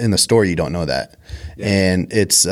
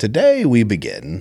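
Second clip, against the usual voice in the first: fairy tale storyteller narration voice; 2 semitones higher than usual. Asked by the other speaker for it, speaker does the fairy tale narrator voice. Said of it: "the like fairy tale voice".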